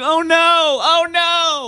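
very high, slow, drawn-out tearful crying wail. Retelling a wife's upset phone call: imitating someone crying. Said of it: "crying, screaming".

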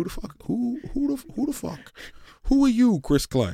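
bad fake Jamaican accent. Imitating a player mocking another, in a bad Jamaican accent. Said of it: "What was that voice?".

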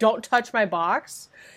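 very loud, slow, drawn-out voice. Speaker retells calling out on the way to the bathroom, said very loudly. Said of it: "I like very loudly said on my way to the bathroom".

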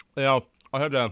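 talking with mouth full. Starting to tell the others some news, eating while talking. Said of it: "sorry, I'm eating gold bears".

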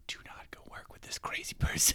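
hushed, whispered aside under the breath. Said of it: "[name] kind of whispering to her".

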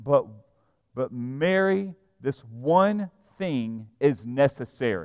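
slow and emphatic, stressing "Mary" and "one".

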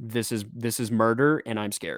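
ordinary talk, nothing marked

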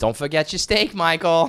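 put-on high, loud, fond old Italian woman voice. Retelling what an old Italian woman who fed them would say, imitating her. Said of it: "I'm sure she was like".

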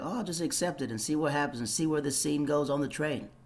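ordinary talk, nothing marked

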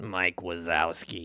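character voice dropped low, said plainly and softly. Listing a toy set's contents, the speaker ends on a Mike Wazowski impression. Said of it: "That's a really good impression".

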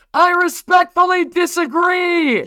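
mock, very high, full-volume, all-out scream. Recounting a dead-quiet moment at a football game, the speaker re-enacts screaming as loud as possible. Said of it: "just screamed as loud as I could".

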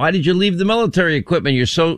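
ordinary talk, nothing marked

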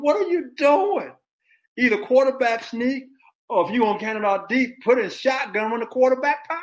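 put-on very high, loud screaming. Retelling watching the game and yelling at the team: imitating own screaming. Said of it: "I'm screaming".

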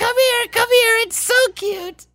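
very high, cartoony children's TV witch voice. Retelling how they talk to their cat: children's tv witch voice. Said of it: "you sound like, uh, the witch from, like, a, a children's T V show".

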